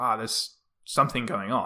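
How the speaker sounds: usual speaking voice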